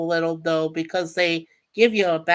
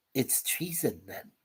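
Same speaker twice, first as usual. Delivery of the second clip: hushed, breathy villain whisper; 7 semitones lower, 14 dB quieter than usual. Doing a Star Wars quote for chat: Emperor Palpatine voice. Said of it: "I love doing Emperor Palpatine's voice".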